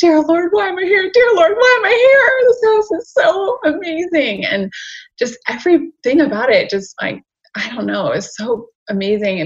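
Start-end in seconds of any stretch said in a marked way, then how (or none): 0.0-4.4 very high, loud crying wail, in full tears. Speaker retells praying in tears while touring a house; imitating own crying. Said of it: "I'm like in prayer position crying".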